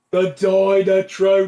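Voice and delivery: put-on heavy Birmingham accent, put on and laid on loud. Quoting the alien line about the machine: regional British accent. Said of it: "this heavily regional British accented fucking alien".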